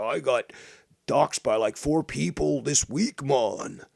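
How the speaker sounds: loud, high, drawn-out complaining, griping tone. Retelling what Tony said last week: imitating someone complaining. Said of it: "Tony was complaining last week".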